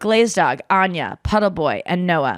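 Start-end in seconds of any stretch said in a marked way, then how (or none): none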